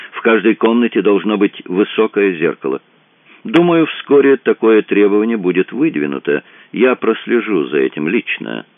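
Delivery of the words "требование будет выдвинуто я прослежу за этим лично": ordinary delivery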